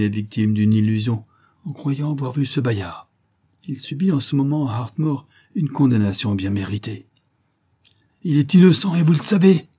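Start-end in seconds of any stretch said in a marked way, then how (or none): 8.2-9.6 crying the words out, high and loud. A lady defends a condemned man against the doctor, crying out. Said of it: "cria Lady Kathleen".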